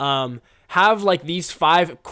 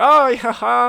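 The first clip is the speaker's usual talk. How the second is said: high, loud, chuckling, dismissive, laughing it off; 9 semitones higher, 5 dB louder than usual. Retelling how they answered an awkward question: retelling laughing it off. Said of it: "kinda laugh it off".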